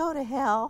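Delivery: acted sweet, high little voice. Retelling your reply to a man who then hired you, in your sweetest little voice. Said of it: "in my sweetest little voice said".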